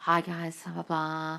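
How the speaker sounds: low, soft, slow, unhurried murmur. Speaker mimics how other people in those videos talk: imitating a low voice. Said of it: "in a low voice".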